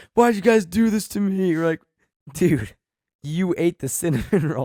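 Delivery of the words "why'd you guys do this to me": put-on high, wild, accusing, frantic freak-out. Retelling a guy's outburst after eating the cinnamon roll, imitating someone freaking out. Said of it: "he's freaking out".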